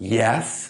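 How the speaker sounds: put-on curt, rude, dismissive one-word delivery. Retelling asking a counter clerk for directions: imitating a rude curt reply. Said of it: "So rude".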